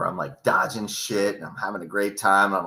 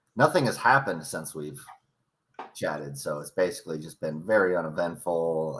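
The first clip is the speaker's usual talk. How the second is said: heavy, super sarcastic delivery; 4 semitones lower, 4 dB quieter than usual. Catching up with another speaker after a long gap: super sarcastic. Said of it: "I'm being super sarcastic".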